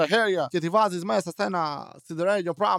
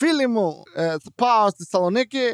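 Greek bent by a put-on American accent; 3 semitones higher, 5 dB louder than usual. Retelling how a Greek-American spoke Greek on purpose, Greek with fake American accent. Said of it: "Μιλούσε επίτηδες με προφορά".

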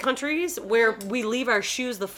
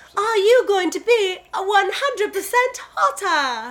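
fake, high, drawn-out British accent; 9 semitones higher, 4 dB louder than usual. Quoting how the show says its name: put-on British accent. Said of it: "That's the way they say that".

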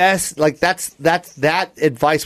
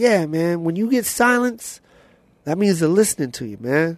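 imitated voice of an older man; 3 dB quieter than usual. Retelling advice an older comedian gave backstage: Joe Torre voice. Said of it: "good Joe Torre impersonation".

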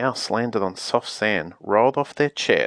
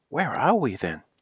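startled, worried, alarmed tone; 2 semitones higher, 3 dB quieter than usual. A girl speaks after a wish has carried them off, alarmed.

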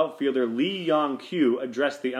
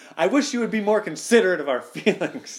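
play-acted, high-pitched, close-up yelling; 6 semitones higher, 4 dB louder than usual. Imagining a player politely shouting in the umpire's face: imitating someone shouting. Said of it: "just shouting in his face".

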